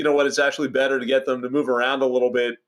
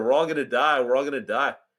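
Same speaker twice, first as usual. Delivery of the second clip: ordinary talk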